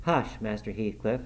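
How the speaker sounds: ordinary delivery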